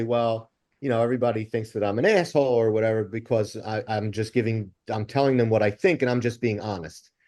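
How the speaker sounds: ordinary talk, nothing marked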